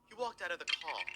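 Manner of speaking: subtle put-on British accent. Speaker tones down an over-the-top British accent for UK audience: subtle British accent. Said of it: "I got to be a little bit more subtle about it".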